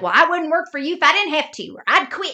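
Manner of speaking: put-on quick, high, heavy, near-unintelligible Southern accent. Speaker quoting a TV show character's one-liners, thick Southern accent. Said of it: "She talks like this and it is like she's almost unintelligible in how like Southern the accent is".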